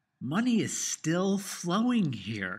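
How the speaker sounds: money stressed, high and slow. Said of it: "you would not get the inflection in my voice".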